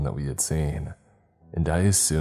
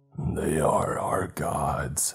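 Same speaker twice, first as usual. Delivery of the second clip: deep croaking creature voice. Narrator reading the creature's first words to him, croaking. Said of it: "he croaked".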